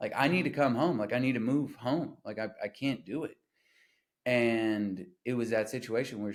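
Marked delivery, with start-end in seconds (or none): 0.0-3.4 imitated tearful, crying voice. Retelling a phone call to mom: retelling own crying plea. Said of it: "literally crying".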